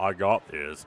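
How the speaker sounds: very low, grisly, tough rumbling voice. Voicing the giant man before his last bite: grisly voice. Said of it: "this grisly voice".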